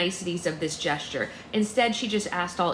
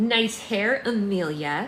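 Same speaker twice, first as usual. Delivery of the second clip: snotty, stuck-up, sneering, snide delivery. A narrator reads a girl's line to Amelia, snotty. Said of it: "she said in a snotty voice".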